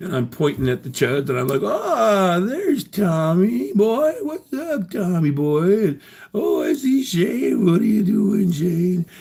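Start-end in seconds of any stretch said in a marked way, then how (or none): 1.4-9.1 play-acted sloppy drunk slur, very high, slow. Recalling greeting the people who came up to him, imitating drunken slurring. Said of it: "I'm slurring my words".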